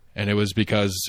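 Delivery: ordinary delivery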